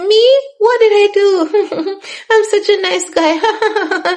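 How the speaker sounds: mock very high, slow, chuckling through the words. Retelling how he answered the question about teammates' sisters: imitating someone laughing while talking. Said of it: "And he was laughing".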